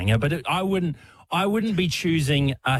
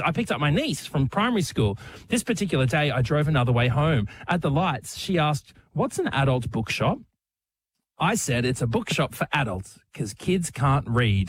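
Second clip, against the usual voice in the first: ordinary talk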